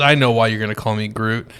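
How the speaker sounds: low, bone-dry, dead straight deadpan delivery. Retelling what a son said to a joke, imitating a deadpan delivery. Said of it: "with the straightest face ever".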